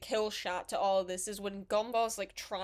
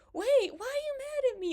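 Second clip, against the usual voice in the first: innocent, frightened, very high voice cracking; 4 dB louder than usual. Describing a cartoon episode, the speaker imitates Gumball's innocent, scared, cracked voice. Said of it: "in that like innocent, scared, like cracked voice".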